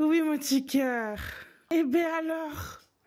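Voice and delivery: breathless, catching breath between words. Carrying a camera and greeting someone, out of breath. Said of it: "je suis essoufflée".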